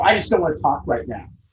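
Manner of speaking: smug, self-satisfied, rushed, dismissive tone. Showing how not to respond when someone yells, smug. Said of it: "Not smugly go".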